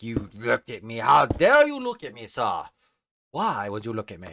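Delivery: mock booming, loud, swooping, huffy offended outburst. Imitating a mad Enderman: offended Enderman voice. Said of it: "Endermen always take it so seriously".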